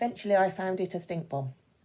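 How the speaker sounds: one unbroken run, flat, no pauses or emphasis. Demonstrating a sentence read straight through: read through without pauses. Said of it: "if I read it without pauses".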